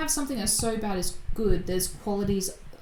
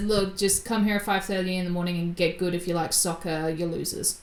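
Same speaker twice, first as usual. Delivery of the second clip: ordinary talk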